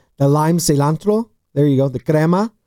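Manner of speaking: put-on Spanish-accented speech. Looking over a plate of tacos, in a Spanish accent. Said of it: "I got a good accent".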